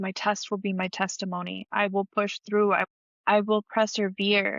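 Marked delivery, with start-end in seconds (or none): none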